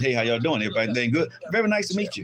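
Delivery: put-on polite, proper, well-mannered public voice. Showing how to greet people properly in public: acting a polite public greeting. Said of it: "But when we do it out in public".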